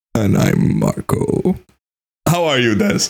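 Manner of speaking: put-on sexy, breathy asmr-style podcast voice. Podcast hosts open the show, introducing themselves in a sexy ASMR voice. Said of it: "Our sexy voice".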